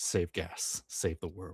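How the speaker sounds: very quiet, soft, hushed, under the breath. A player turns off the car in the story and speaks, very quiet voice. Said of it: "very quietly say".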